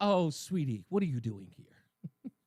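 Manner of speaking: patronizing, condescending, talking-down tone. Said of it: "He's completely looking at her like".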